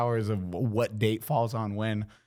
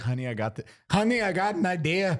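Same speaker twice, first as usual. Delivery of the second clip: mock, put-on Irish accent; 7 semitones higher than usual. Acting out the listener's dad pitching an idea to the mom: Irish accent. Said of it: "that your Irish accent?".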